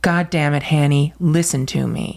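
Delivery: put-on loud, strong, articulate outburst. Retelling what a boy in the back suddenly said to his driving mother, loud and strong. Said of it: "in the most articulate, strong, loud voice".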